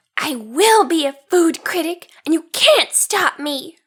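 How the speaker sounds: growled, growly pirate captain voice. Narrator reads Marianne answering the pirate captain; growling. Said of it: "she growled as growly as Captain Grossbeard".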